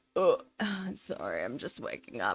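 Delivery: soft, croaky, creaky, just-woke-up vocal fry. Mimicking someone woken up who apologizes for their voice, imitating just-woke-up vocal fry. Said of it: "Vocal fry".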